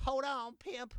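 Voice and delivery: poorly done, very high put-on voice. Joking about a fight, doing a horrible Katt Williams impression. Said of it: "That was a horrible Cat Williams impression".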